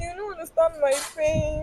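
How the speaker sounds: crying, high and tearful, weeping through words. Answering someone who asks why they are crying: crying. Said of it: "Why are you crying?".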